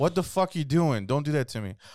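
mock aggressive outburst. Acting out an argument about being filmed: acting aggressive. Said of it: "why are you so aggressive?".

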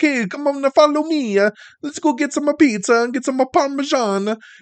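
over-the-top Italian accent, very high. Criticizing a voice performance, demonstrating a stereotypical italian accent. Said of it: "It's stereotypical Italian".

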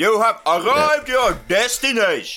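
clear, shrill, extremely loud high call. Giving directions as the Brian Blessed audio track, in an extremely loud, clear Brian Blessed voice. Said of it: "extremely clear, extremely loud".

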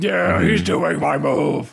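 gruff, rough cartoon voice. Retelling a cartoon scene, saying the character's line in Piccolo voice. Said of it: "he says it like Piccolo".

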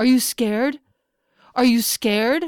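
high, loud yelling.

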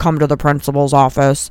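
announcer voice as if over an intercom. Describing a voice heard over a PA, imitating a principal on an intercom. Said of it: "like a principal on an intercom being like".

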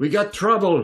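shouting male voice. Game master voicing an unseen man around the corner, male voice shouting. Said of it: "you hear a male voice shout".

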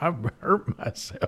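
put-on American Southern accent. Mimicking the other speaker's zombie line: imitating a US Southern accent. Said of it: "start talking like a U S Southerner".

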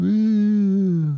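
high, long, drawn-out whoop. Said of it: "That's my [name] impression".

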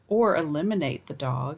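tiny voice suddenly plunging very deep. Retelling what a little boy said about a punishment, voice dropping suddenly very low. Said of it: "his tiny voice suddenly dropped very low".

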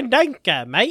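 put-on Australian accent. Answering a remark about sounding australian: put-on australian accent. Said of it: "You sound like you have an Australian accent".

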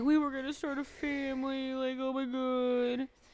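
high, tearful crying wail, "God" drawn out. Retelling a scene where the wife is crying: imitating someone crying. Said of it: "And she's crying".

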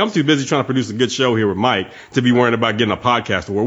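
ordinary talk

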